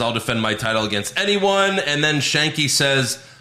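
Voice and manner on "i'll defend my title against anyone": ordinary talk, nothing marked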